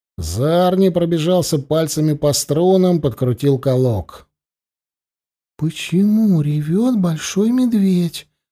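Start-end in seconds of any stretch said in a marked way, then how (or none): 5.6-8.2 whispered, much higher. Kiriya asks Zarni a question as the bear people watch them, whispered. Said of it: "прошептала Кирия".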